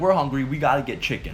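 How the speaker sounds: plain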